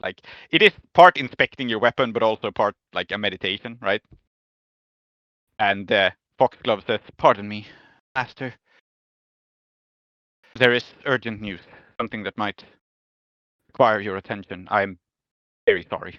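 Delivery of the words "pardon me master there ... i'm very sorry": put-on character voice, deferential and afraid. Voicing Foxglove interrupting the knight: respectful and fearful. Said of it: "this respect and fear in Foxglove's voice".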